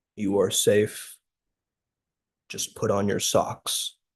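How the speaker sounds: put-on deep, solemn voice. Speaker quotes the inner voice that overrode their whining; imitating a deep solemn voice. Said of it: "the deep, solemn voice that gives me goosebumps".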